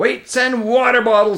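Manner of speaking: cross, irritated, angry tone. Someone being sat on during a scuffle complains, in an angry voice. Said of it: "came an angry voice".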